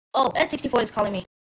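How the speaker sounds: fast, rapid delivery. Opening a special episode, a character notices the N64 calling, fast.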